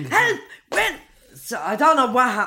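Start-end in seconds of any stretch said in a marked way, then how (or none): 0.0-0.9 mock panicked yelling, higher. Retelling her phone reaction to her son's hostage call: retelling screaming on the phone. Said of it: "I'm screaming on the phone".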